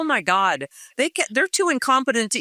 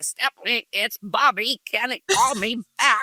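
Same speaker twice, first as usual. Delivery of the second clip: put-on gargling voice. Retelling voice messages from Bobby, imitating Bobby's gargling voice. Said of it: "sounds like he's gargling pennies".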